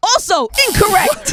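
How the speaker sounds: loud, very high game show host announcer voice. Hosting a quiz and ruling a guess wrong, in a game show host voice. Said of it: "You got the game show voice right now".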